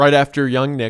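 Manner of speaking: ordinary delivery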